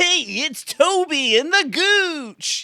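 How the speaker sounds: very high, loud, stretched-out radio DJ voice. Pitching to a co-host how to open their show, Zoo Crew radio voice. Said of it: "like the Zoo Crew kind of like radio".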